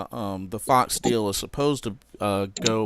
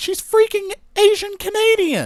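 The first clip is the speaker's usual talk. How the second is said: high, loud exasperated outburst. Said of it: "I'm like".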